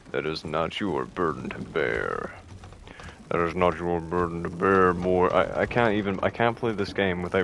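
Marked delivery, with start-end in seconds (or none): 0.1-5.2 pretend deep voice. Playing a game and voicing the father to his boy, put-on deep voice. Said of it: "pretending to do like a deep voice".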